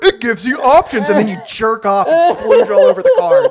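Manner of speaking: teasing, mocking. Mocking how another speaker always praises cards: imitating Chris's catchphrase. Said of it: "you're like".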